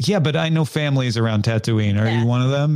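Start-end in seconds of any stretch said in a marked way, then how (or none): none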